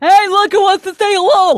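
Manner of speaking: loud, very high, goofy dumb-guy voice. Imitating the other speaker showing the phone to fans: dumb guy voice. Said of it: "I'm just doing a dumb guy".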